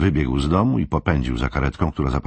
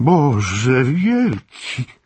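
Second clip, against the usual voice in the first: very high, loud exclamation with "Boże" drawn out; 11 semitones higher, 5 dB louder than usual. Frode, just told an ambulance took Henryk to hospital, exclaiming. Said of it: "Wykrzyknął Frode".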